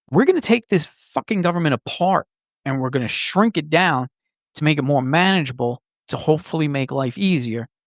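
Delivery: ordinary talk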